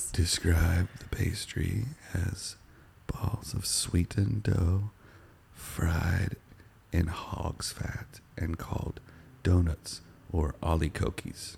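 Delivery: put-on ASMR whisper-voice. Reading a line aloud on request, in a put-on ASMR voice. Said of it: "Do it in your best A S M R voice".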